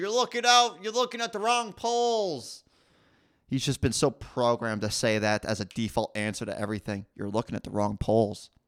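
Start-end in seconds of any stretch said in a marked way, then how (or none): 0.0-2.6 put-on very high, drawn-out, stretched yell. Mocking a man who gives the same answer to everything, mimicking someone yelling. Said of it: "He's just yelling out into the clouds".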